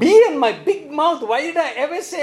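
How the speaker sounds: high, exasperated tone. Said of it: "How many times have you said".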